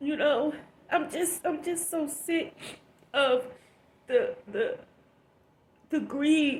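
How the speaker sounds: crying while talking. Complaining to viewers about greed and selfishness, crying while talking. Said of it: "I'm snotting and crying".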